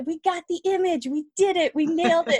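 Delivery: high-pitched, smug, self-pleased crowing. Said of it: "just kind of smugly being like".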